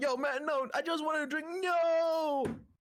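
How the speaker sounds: put-on very high, drawn-out American frat boy drawl. Voicing a drunk being thrown out of a tavern: American frat boy voice. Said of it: "the American frat boy".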